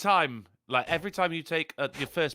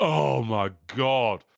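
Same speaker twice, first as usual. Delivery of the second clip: orgasmic moan of delight; 4 semitones lower than usual. Mocking tv characters tasting food: mock orgasmic moan over food. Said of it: "it's like they have an orgasm".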